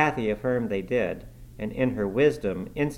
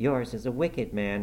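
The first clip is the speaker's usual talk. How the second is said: ordinary delivery, nothing marked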